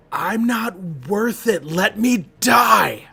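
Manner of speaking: loud, high, raspy, raw scream. As Milo's eyes start to shut, he screams his reply: Milo's raspy dirty scream. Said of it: "in the most like raspy, no country for old men, like just dirty voice".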